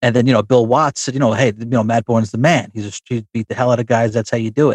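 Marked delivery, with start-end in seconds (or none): none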